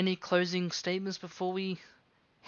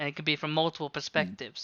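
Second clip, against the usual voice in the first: normal talking voice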